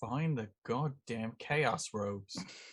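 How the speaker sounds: very low, very quiet, hushed mutter. A tabletop player speaks as their character in a dorm, very quietly. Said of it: "and I very quietly am like".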